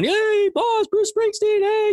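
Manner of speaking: high, acted, calling-out holler. Retelling a fan filming with a camera and calling out like the others, retelling a yell. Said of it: "he's yelling".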